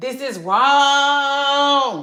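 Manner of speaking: shrill, very loud scream, stretched out. Voicing the married woman inside, who objects: acting out a scream. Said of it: "is screaming like".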